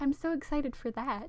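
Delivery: clearly sarcastic voice. Talking about the foam and the rain, sarcastic tone. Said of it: "that was definitely my sarcastic voice".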